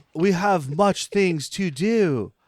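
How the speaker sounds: put-on slow, deliberate, careful English accent. Joking about the Dracula movie: Keanu Reeves English accent. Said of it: "Dracula movie, flawless English accent".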